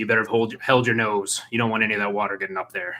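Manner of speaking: rough, raspy, fairly scratchy voice. Storyteller voices a character lifting the listeners up, in a pretty scratchy voice. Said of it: "they say like in a in a in a pretty scratchy voice".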